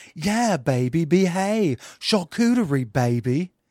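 slow voice, every word drawn out. Showing another voice saying charcuterie: Austin Powers voice. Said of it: "that was Austin Powers".

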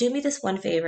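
normal talking voice

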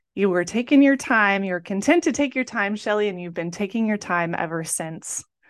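ordinary delivery

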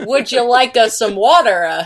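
put-on, badly done Italian accent. Retelling game dialogue where McCree tries an Italian accent: McCree's bad Italian accent. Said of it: "we need to talk about your Italian accent".

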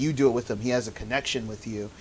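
ordinary delivery

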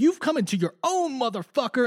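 fervent, worked-up voice. Retelling an episode scene, imitating Sandoval: impassioned imitation of Sandoval. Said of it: "impassioned, being like".

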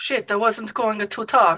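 fake, put-on Italian accent. Player told to speak in italics answers instead in mock italian accent. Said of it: "I said italics, not Italian".

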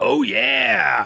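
very high, creaky, rough, stretched yeah. Saying how a phrase would sound from the Kool-Aid Man: Kool-Aid Man voice. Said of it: "If it were the Kool-Aid Man, it would be".

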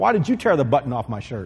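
mock fault-finding, accusing tone full of blame. Acting out a husband asking his wife about a missing button: imitating an accusing husband. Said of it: "husbands can say things in a way that's sort of accusative".

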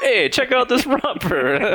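very high-pitched put-on Brooklyn accent, male voice. Joking with friends about an accent on someone in a romper: put-on brooklyn accent. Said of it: "the last accent that you could imagine".

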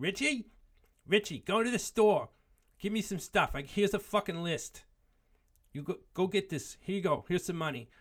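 put-on thick Brooklyn accent, very high-pitched and loud. Quoting a woman sending him to the store, in a heavy Brooklyn accent. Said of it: "she had this real heavy Brooklyn accent, which I'm going to try to replicate".

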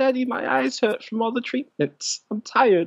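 put-on very high, whiny, tearful voice like a crying child. Acting out a sick kid answering his dad, imitating a crying kid. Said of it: "He's like crying".

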